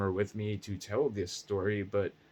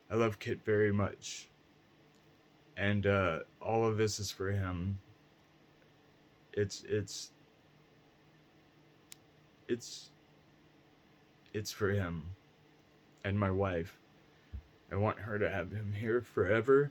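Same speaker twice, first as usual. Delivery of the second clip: fighting back tears, stumbling, barely holding together. Speaking on a stream about Kit and his wife, holding back tears. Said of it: "I'm trying not to cry on the stream right now".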